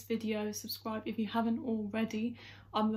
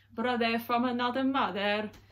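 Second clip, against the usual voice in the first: clumsy, botched, bad Maltese accent; 4 dB louder than usual. Copying the family's accents, in the worst Maltese accent ever. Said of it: "in my worst Maltese accent ever".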